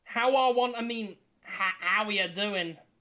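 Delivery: put-on snobby, snooty goblin voice and accent. In a role-play game, a goblin greets a player's character: snobbish goblin voice. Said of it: "You snob goblin".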